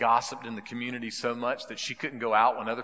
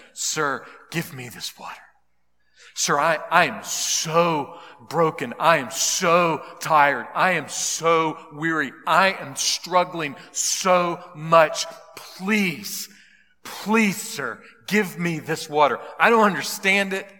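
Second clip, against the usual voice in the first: acted desperate woman pleading, higher and louder; 5 semitones higher, 8 dB louder than usual. Retelling a woman's reply to Jesus, imitating a desperate woman pleading. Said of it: "this desperate woman responded".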